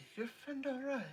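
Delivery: very high, hushed half-whisper. Voicing a character who leans over to ask about a friend: half-whispering. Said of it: "whisper over to you".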